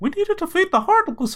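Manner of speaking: squeaky cartoon mouse impression. Talking about a game's characters, doing one of his lines: Mickey Mouse voice. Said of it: "in Mickey Mouse's voice".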